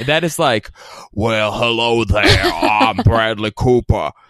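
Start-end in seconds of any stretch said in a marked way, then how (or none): 1.1-4.1 bad, hasty put-on Southern accent. Mocking an actor's new low voice: Bradley Cooper impression. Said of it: "like a bad, like, uh, hastily thrown together Southern accent".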